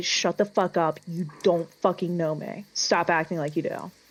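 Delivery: hushed, whispered speech. In a tabletop game, a character strikes their father and speaks into his face: whispering. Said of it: "I'm gonna whisper".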